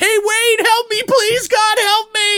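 very high, shrieking screaming cry. Retelling a film scene where she is stuck: imitating someone screaming for help. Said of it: "she starts screaming at the".

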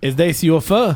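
put-on Hungarian accent in English. Retelling a phone caller's question, imitating a hungarian accent. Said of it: "the person asked me like a Hungarian accent".

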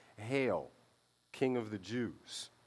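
slow, scornful, mocking ceremonial royal-proclamation style. Retelling how soldiers bowed before Jesus: imitating a mocking proclamation. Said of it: "And then mockingly".

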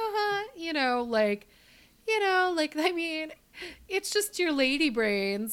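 put-on down-home cutesy voice. Describing a misogynistic man's remarks about women, imitating his cutesy, folksy tone. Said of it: "in this really like cutesy, folksy sort of way".

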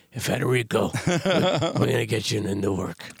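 put-on rough, raspy voice. Imitating an agent calling an actor with good news, in a raspy agent voice. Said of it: "the raspy voice".

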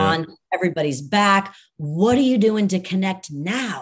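ordinary delivery

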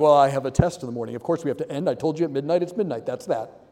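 low, stern, matter-of-fact voice. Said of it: "stoic and stern".

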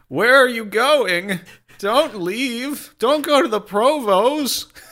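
put-on pathetic little voice. One speaker echoes the voice the other did a second ago, pathetic little Marxist voice. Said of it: "That pathetic little Marxist voice".

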